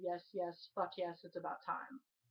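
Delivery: ordinary delivery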